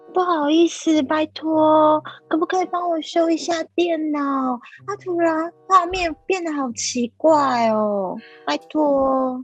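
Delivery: put-on cutesy, childlike, pleading baby voice. Pleading with someone busy for a favor, in a cutesy baby voice. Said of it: "有求于人的时候，我就会用娃娃音".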